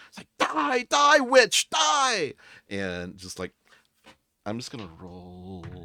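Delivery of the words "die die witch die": very high, very loud, slow, shrill, drawn-out battle cry. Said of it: "She's so eloquent".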